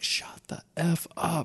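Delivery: put-on, very slow, stage-whispered shout. Retelling shouting at noises in a building: retelling own shout at top of lungs. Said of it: "at the top of my lungs".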